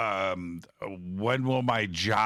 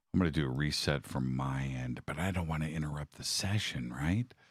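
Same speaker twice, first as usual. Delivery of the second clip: soft, hushed half-whisper under the breath; 6 semitones lower, 6 dB quieter than usual. Talking through a lost connection during a Ouija session: half-whispering. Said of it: "Why am I whispering?".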